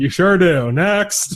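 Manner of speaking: slow indifferent brush-off. Retelling the judge's reply to the sentenced man: imitating an indifferent judge. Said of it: "he completely doesn't give a shit".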